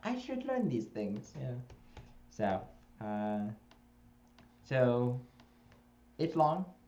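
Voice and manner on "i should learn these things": put-on Greek accent, very high pitched. Speaker retells what a woman said after hearing a friend read, imitating her Greek accent. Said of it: "in her Greek accent".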